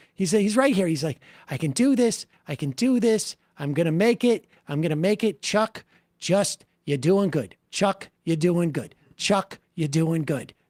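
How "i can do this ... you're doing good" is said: mock jittery, nervous reassuring tone, repeated over and over. Voicing the nervous politician's self-talk over a clip: imitating nervous Chuck Schumer. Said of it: "'cause he's so nervous".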